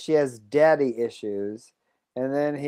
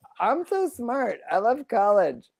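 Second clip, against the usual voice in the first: put-on high, slow dopey young woman voice, words drawn out; 8 semitones higher, 3 dB quieter than usual. Acting out a made-up scene between a professor and a student: acting out the student. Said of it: "And then the girl's like".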